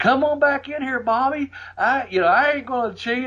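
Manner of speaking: put-on very high-pitched hillbilly country accent. Retelling what Buddy said from the ring at a house show, in a country hick accent. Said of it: "his country hick accent".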